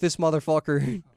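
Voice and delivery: Irish-sounding accent creeping into the phrase. Demonstrating the phrase that sometimes comes out sounding Irish, Irish-sounding accent. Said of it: "sometimes I do sound like I'm Irish".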